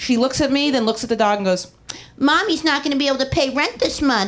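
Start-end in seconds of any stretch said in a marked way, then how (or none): 2.2-4.3 put-on cooing baby talk voice. Quoting a roommate talking to the dog; imitating roommate's baby voice. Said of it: "talking in the baby voice".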